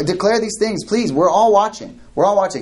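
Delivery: high, taunting, mocking sarcastic tone. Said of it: "This is this holy sarcasm".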